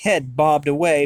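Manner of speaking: ordinary delivery, nothing marked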